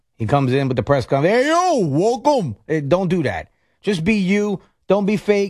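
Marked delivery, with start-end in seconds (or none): 1.5-2.6 over-the-top, exaggerated Jersey accent, high pitch. Imagining the new Rutgers coach at his press conference, in an exaggerated Jersey Shore accent. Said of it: "overboard now with the Jersey Shore accent".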